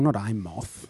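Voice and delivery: soft country drawl, rural. Chatting with a co-speaker about Godzilla, the speaker slips into a country drawl. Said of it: "God, I sounded really country then".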